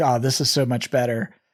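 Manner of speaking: ordinary talk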